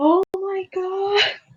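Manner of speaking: startled, high, shocked screaming. Retelling seeing something shocking on the stream screen: imitating own screaming. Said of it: "and I was, like, screaming".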